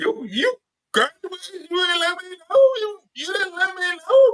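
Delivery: very high, tearful crying voice. Retelling how mom reacted on the porch: imitating mom crying. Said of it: "my mom was on the porch crying like".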